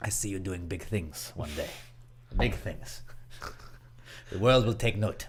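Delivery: whispered, breathy part-Russian movie-villain accent. Performing a bit for friends, in a movie villain accent. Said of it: "that is a movie villain accent".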